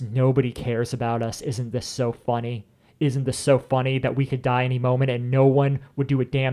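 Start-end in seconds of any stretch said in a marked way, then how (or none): none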